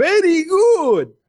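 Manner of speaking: put-on very high, piercing, shrill game-announcer cry. Speaker complaining about a game's announcer, imitating the announcer screaming. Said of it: "that fucking announcer screaming".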